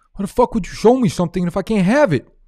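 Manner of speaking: shrill, full-throated yell, very loud and high-pitched. Doing an impression while talking about the movie Uncut Gems: Kevin Garnett impression. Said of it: "my Kevin Garnett impression".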